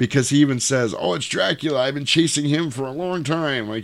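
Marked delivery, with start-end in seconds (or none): 1.0-3.7 eager, thrilled, pitched-up, acted exclamation. Retelling a film character's line about chasing Dracula: imitating an excited character. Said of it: "he's all excited".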